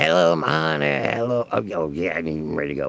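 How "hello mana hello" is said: put-on froggy character voice, slower. Starting a pretend game, speaking as the frog, froggy voice. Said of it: "is that your froggy language?".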